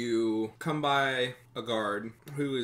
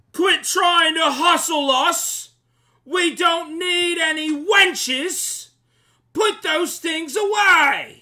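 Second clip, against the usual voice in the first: shrill, very high, very loud yelling; 13 dB louder than usual. A guard atop the wall looks down at the arriving group: guard yelling out. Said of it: "And he yells out".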